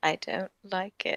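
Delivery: tiny, very small, high, soft voice. Given a piggyback ride to feel tall, the small one objects, very small voice. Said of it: "a very, very small voice just saying".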